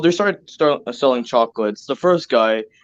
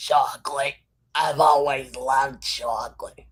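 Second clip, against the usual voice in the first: put-on smoky grandma voice, quieter; 5 dB quieter than usual. Describing a remembered voice, the speaker does a grandma smoker voice. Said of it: "If she smokes a lot".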